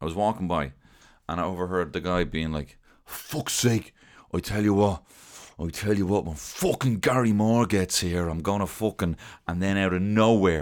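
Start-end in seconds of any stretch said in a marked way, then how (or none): 3.0-9.2 put-on fuming man voice, ranting, much higher. Retelling a man overheard while walking by, a mock-fuming rant. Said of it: "was fuming".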